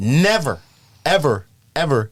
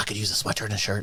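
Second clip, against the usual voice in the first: mimicked rapid speech, much faster and quieter; 4 semitones lower, 9 dB quieter than usual. Retelling a woman asking him for clothes: imitating fast talking. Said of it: "and just talking real fast".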